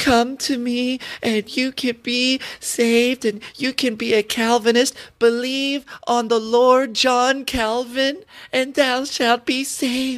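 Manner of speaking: high, creepy, effeminate, preachy tone. Mocking a man calling people to be saved, in a creepy, effeminate voice. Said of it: "He's talking in this creepy, effeminate voice".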